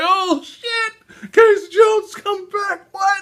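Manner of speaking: very high, slow, laughing cry of overjoyed disbelief.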